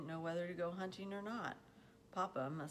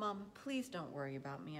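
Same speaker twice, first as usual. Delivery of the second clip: ordinary delivery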